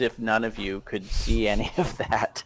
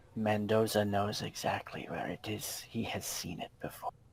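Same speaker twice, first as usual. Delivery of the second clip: very quiet, hushed, secretive close whisper; 11 dB quieter than usual. Narrating a man who comes up close to Natalia's ear, whispering. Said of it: "he kind of whispers in your ear".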